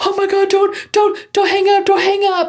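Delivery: mock, very high, frantic, panicked begging. Retelling picking up the phone, imitating mom freaking out. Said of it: "Like freaking out".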